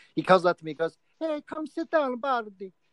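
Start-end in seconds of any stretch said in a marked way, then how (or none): 1.2-2.7 put-on thick Italian accent, pitched high. Retelling a man calling him up for his turn, in a thick Italian accent. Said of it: "he had a thick Italian accent".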